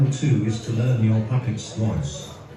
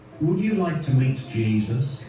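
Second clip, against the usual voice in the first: ordinary delivery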